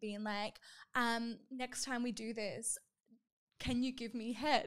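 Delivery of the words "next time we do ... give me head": whispered, imitated whisper. Retelling what a high school boyfriend asked while making out: imitating a whisper. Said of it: "he kinda whispers to me".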